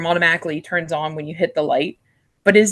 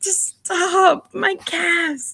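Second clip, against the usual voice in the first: put-on, very high, shrill scolding yell; 12 semitones higher than usual. Recounting an embarrassing moment in the work bathroom, retelling yelling at oneself. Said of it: "I get like yelling at myself".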